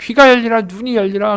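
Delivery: loud, ringing, commanding voice.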